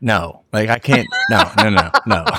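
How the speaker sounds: slow, drawn-out string of repeated "no". Retelling how his wife reacted to breathing in bed: imitating his wife refusing. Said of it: "she'd be like".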